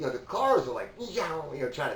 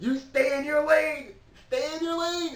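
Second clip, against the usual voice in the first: put-on piercing, very high-pitched, shrill yell; 4 dB louder than usual. Recounting passing a trailer on the road, retelling a yell at its driver. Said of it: "And I'm yelling at him".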